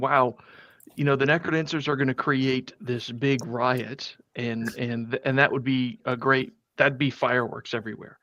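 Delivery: normal talking voice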